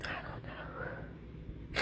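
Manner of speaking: hushed, barely there, slow whisper.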